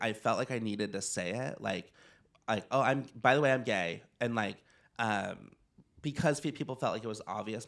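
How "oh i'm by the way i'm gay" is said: usual speaking voice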